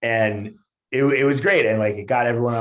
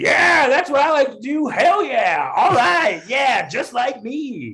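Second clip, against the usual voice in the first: put-on high, loud, drunken yelling. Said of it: "just yells that out".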